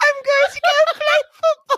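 very high, squeaky puppet voice. Joking about how a famous footballer sounds, doing a David Beckham Muppet voice. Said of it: "Muppet voice".

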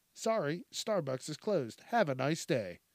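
put-on robotic voice. Retelling how a girl turned away starbucks customers: imitating a robotic voice. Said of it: "she said that she used a robotic voice".

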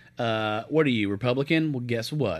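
ordinary talk

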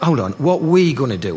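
ordinary talk, nothing marked

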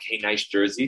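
normal talking voice

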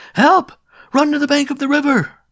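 shrill, very high, full-volume scream. After a great splash, people cry out for help. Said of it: "then cries of".

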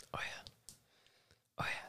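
hushed, eerie, breathy ASMR-style whispered murmur. Finishing a rundown of assignment due dates, creepy. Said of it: "That was kind of creepy".

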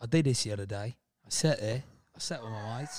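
plump, full-cheeked British accent. Asked by another speaker to do their British, the speaker obliges: British accent. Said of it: "Now do your British".

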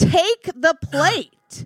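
demanding, screaming outburst. Retelling how a waitress screamed at the diner: imitating a waitress screaming. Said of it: "then she screams".

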